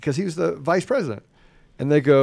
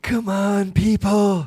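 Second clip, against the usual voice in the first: put-on senile old man voice, pitched higher; 5 semitones higher than usual. Mocking a politician's words on vaccines: Joe Biden impression. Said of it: "let me try to do an impression".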